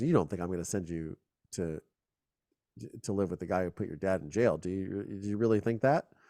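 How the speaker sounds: mock icy, cold, unfeeling and callous tone. Retelling what the judge said in court: imitating a cold, callous tone. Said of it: "He just said it really cold and callously".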